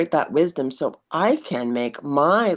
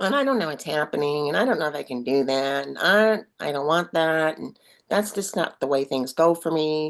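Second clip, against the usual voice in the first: mopey downer voice. Describing the self-doubting inner downer, acting it out: funny Downer voice. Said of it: "I'm making that funny voice".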